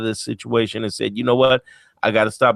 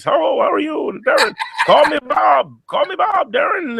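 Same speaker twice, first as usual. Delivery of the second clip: put-on cool Canadian accent, pitched a touch higher. Speaker recalls meeting Bob Proctor in Arizona in 2010, Bob Proctor Canadian voice. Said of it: "That cool Bob Proctory Canadian voice".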